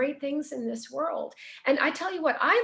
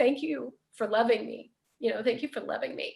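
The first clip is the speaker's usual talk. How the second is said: mock ugly-crying, sobbing and tearful through words; 2 semitones lower than usual. Retelling a phone call to mom and dad after a meeting: retelling own sobbing words. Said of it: "I get in the car and I'm sobbing".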